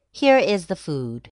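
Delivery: ordinary delivery, nothing marked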